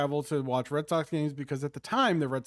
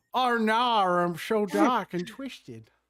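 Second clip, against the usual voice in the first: mock stage villain voice, slow, higher, drawn out. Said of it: "that was better than I expected".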